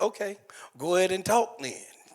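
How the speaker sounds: loud, cocky, arrogant and dismissive tone. Retelling his own past reply to his wife: imitating his own arrogant reply. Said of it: "With my arrogant self".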